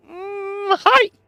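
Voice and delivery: voicing a puppet. Voicing a little puppet greeting a player: puppet voice. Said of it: "this little puppet kinda looks down and goes".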